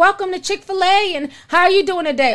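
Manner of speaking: high, eager, welcoming drive-thru cashier voice. Describing the drive-thru staff greeting him as he orders: imitating an eager drive-thru worker. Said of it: "Everybody sounds like they want to be there".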